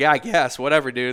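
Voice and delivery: annoyed, pissed-off tone. Retelling a reply to the cop: retelling an annoyed reply. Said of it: "I was, like, pissed".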